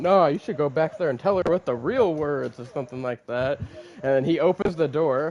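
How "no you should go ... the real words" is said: high, mock preachy, lecturing fatherly voice. Retelling a character's expected dad lines: imitating a lecturing dad. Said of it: "he's probably gonna lecture me like".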